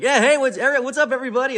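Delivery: loud, piercing, energetic. Speaker shows how he greets everyone on a conference call: loud, piercing greeting. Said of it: "this guy's coming with a lot of energy right now".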